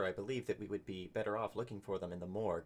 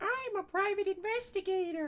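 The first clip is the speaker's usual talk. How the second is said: very high, loud scream. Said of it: "he's screaming".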